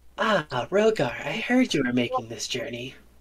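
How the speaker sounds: feminine voice. Voicing a character who greets another character in a role-play, womanly voice. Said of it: "it's a womanly voice".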